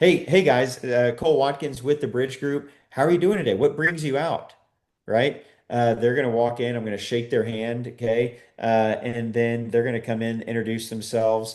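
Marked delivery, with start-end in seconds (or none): 0.0-4.5 lively, energetic, high-energy delivery. Demonstrating greeting people at the door with a clipboard, lots of energy. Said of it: "I'm I'm lots of energy".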